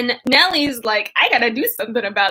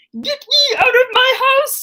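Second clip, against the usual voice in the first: put-on squeaky, very high puppet monster voice; 13 semitones higher, 3 dB louder than usual. Recapping Edgar running out of the house, Cookie Monster impression. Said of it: "that was like a Cookie Monster impression".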